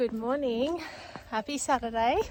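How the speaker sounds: slightly winded, a bit out of breath. Saying good morning while out on a morning run, a bit out of breath. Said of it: "sorry if I'm a bit out of breath".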